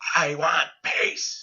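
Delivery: put-on high, mild, held-in screaming outburst. Retelling how a woman in a sauna screamed at the group, imitating someone screaming. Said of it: "she starts screaming".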